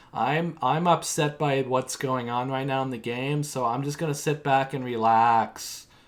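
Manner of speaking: put-on bored voice. Recapping a reality show's confessionals, imitating Nick's bored delivery. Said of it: "his TRs are so boring".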